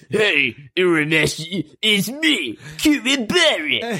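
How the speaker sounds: very high, swooping, bouncy dopey tough-guy voice. Discussing a favourite character's dub, quoting him: Kuwabara dub voice. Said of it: "I love his dub voice".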